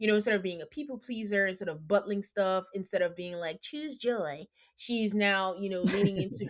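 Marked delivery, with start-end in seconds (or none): 3.6-4.4 play-acted, heavily dripping sarcastic tone. Quoting someone's old people-pleasing motto, imitating with dripping sarcasm. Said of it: "Dripping with sarcasm?".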